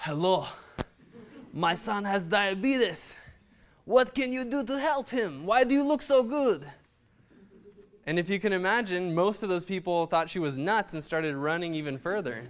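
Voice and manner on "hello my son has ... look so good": heavy put-on Russian accent, laid on thick, pitched up. Retelling mom approaching runners on the street: imitating mom's thick Russian accent. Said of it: "overweight Russian lady with a thick accent".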